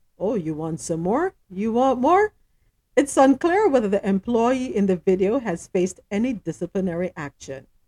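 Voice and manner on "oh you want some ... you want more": ordinary talk, nothing marked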